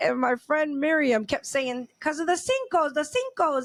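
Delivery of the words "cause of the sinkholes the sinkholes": put-on Spanish accent. Retelling what a friend kept saying: imitating Miriam's Spanish accent. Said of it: "and her Spanish accent too".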